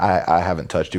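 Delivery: normal talking voice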